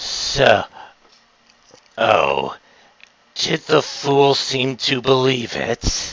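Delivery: hushed, conspiratorial whisper under the breath. A game narrator voicing a character speaking to the players, whispering. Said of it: "And he whispers".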